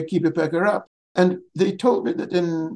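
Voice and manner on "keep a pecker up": ordinary talk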